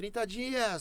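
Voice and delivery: high, slow, excited, bragging tone.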